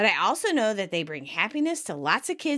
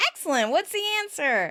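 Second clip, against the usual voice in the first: mock all-excited, eager, high-pitched, quick delivery; 5 semitones higher than usual. Retelling Rachel asking what the answer is: imitating Rachel all excited. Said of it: "Rachel's all excited and goes".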